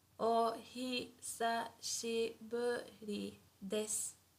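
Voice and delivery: spoken slowly, slow, careful pronunciation. A teacher showing learners how a greeting sounds, spoken slowly. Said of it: "but slowly it would sound like this".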